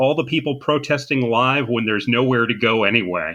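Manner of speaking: plain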